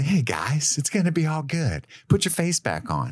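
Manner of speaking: high goofy voice. Acting out what the character would say to calm others: imitating Luffy, super goofy. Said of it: "Monkey's gonna hop in and say".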